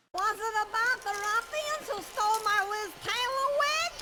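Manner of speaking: high feminine voice. Playing a film character whose late brother arrives: pitched-up feminine voice. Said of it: "Adam Sandler doing a feminine voice, but with his voice pitched up".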